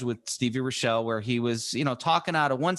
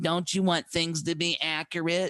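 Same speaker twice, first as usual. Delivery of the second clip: put-on elderly woman voice, pitched higher; 4 semitones higher than usual. Retelling her own phone call about a COVID test, in an old lady voice. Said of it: "I have my old lady sort of voice".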